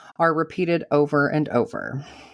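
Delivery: ordinary delivery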